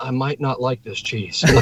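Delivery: put-on whispering. Retelling what she said after he opened her cheese stick: imitating someone whispering. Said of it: "She whispers to me".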